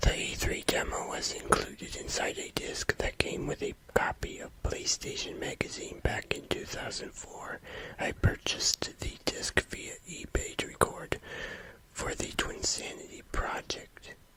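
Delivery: hushed whispered words. Narrating a video, whispering. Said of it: "Sorry I'm whispering".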